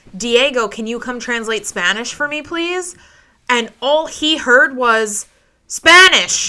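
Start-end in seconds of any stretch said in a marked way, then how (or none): 0.2-3.0 play-acted mild calling out across a distance. Speaker retells calling out to a man outside for translation help, retelling a shout. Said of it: "And I shouted to him".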